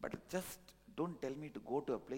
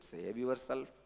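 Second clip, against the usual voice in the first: ordinary delivery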